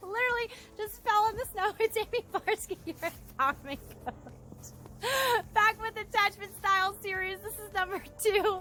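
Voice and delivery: winded, breathless, very high-pitched chatter. Coach greeting viewers after just falling in the snow, out of breath. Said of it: "I'm gonna catch my breath".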